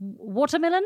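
watermelon said Australian-style. Speaker compares australian and new zealand pronunciation of one word, australian accent. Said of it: "difference between Australian and New Zealand in the word watermelon".

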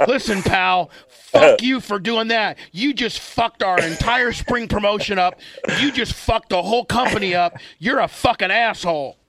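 high, furious rant. Retelling what b j said to the speaker when really mad: imitating someone mad. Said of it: "when you're really fucking make B J mad".

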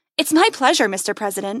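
plain reading voice

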